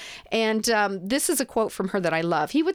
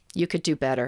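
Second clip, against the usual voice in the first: put-on deadpan delivery, much lower; 7 semitones lower than usual. Retelling what a mother told her daughter's boyfriend on first meeting, mock deadpan. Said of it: "totally deadpan said".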